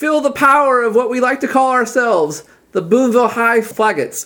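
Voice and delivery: high, loud group holler in unison. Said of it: "hollering in unison".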